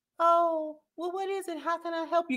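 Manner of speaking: gentle feminine tone. Demonstrating a tone to avoid when someone walks up, soft feminine voice. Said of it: "this soft feminine".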